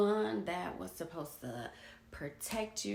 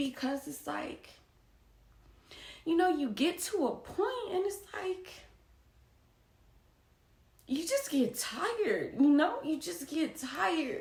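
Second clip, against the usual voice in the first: emotional, pitched-up voice, emotion rising mid-sentence; 7 semitones higher than usual. Recounting a hard time, the speaker is getting emotional right now. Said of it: "I'm getting emotional now as I'm talking about it".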